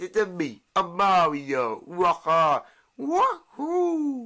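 very slow, drawn-out sing-song voice, swooping up and down. Answering another speaker who calls them Mario: Mario voice. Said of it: "don't you think, uh, Mario?".

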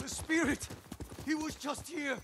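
loud yelling. Speaking in a game scene: yelling. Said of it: "why are you yelling?".

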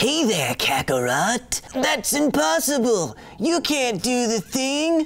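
high-pitched, posh, villainous cartoon voice. Talking about senzu beans, the speaker does the alien villain: Frieza voice. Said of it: "kind of talks like this. Kind of like a space Stewie".

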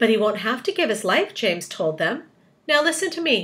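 ordinary delivery

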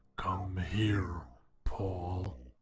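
low, unearthly, otherworldly demonic voice. Reading a story, the narrator voices an unseen caller calling Paul: otherworldly demonic voice. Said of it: "the otherworldly demonic voice".

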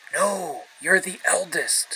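whispering. A narrator reads Susan whispering her reply to Beaver, whispered. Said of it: "whispered Susan".

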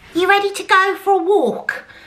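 very high, goofy, silly voice. Showing the voice used to ask the dog about a walk, stupid dog voice. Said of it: "That is my stupid dog voice".

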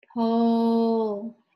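slow, stretched-out pole. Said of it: "Say it slow".

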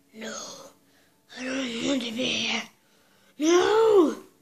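movie-hero style, with no drawn out. Telling Anakin's adventure back to Tatooine, the speaker does an Anakin Skywalker voice. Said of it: "this is my Anakin voice".

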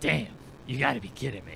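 raspier put-on character voice. Voicing a game character to make them sound different, raspier character voice. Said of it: "I'm getting, like, raspier in an attempt to make them sound different".

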